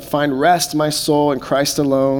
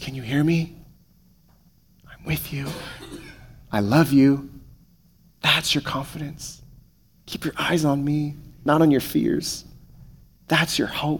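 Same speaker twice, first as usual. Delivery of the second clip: hushed, soft half-whisper with no voice; 6 dB quieter than usual. Preaching about comfort, voicing what God says: half-whispering as God. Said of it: "He whispers".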